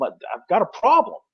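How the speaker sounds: put-on, big, booming, high bellowing holler. A spectator describes a player jogging to the sidelines, imitating him bellowing. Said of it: "he's bellowing like".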